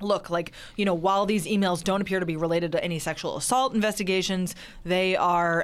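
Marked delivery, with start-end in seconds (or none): none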